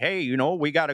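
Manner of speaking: put-on Iowa Midwestern accent. Imitating how the in-laws talk up in Iowa, Iowa accent. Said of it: "this is just how my my in-laws talk up there in Iowa".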